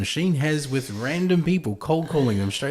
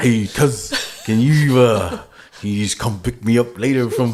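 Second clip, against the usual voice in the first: loud New Zealand bro voice; 2 semitones lower, 7 dB louder than usual. Joking about kiwi voices, imagining one speaking: kiwi bro voice. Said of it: "the bro that did".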